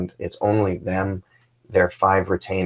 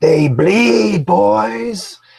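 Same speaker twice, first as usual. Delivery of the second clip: very high, loud, long war-cry scream; 13 semitones higher, 8 dB louder than usual. Voicing a fighter in battle, heard across the village: screaming. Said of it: "he screams out".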